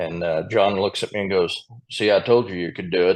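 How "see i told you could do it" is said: put-on deep southern Texas voice. Retelling what John Jones said to them afterward: John Jones's deep Southern Texas voice. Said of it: "in that deep Southern Texas voice".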